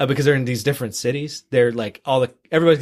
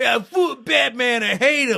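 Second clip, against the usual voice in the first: very high, goofy, dumb-sounding voice; 11 semitones higher than usual. Doing a deliberately dumb impression of Harvey Bullock: dumb Harvey Bullock voice. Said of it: "that's perfect impression".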